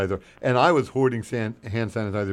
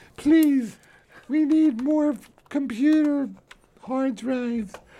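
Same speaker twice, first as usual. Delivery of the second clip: very high, lisping, begging voice. Imitating a co-host's marathon pledge-drive begging speech: imitating Ken's lisping pledge begging. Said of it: "That's my impression of Ken".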